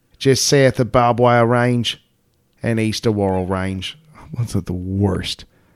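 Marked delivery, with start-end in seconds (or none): 0.2-4.0 terrible fake Australian accent. Describing a location, then admitting to a bad Australian accent. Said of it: "That was an Australian accent that I should be whipped for".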